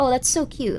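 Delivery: ordinary talk, nothing marked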